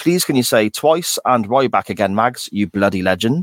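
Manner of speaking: usual speaking voice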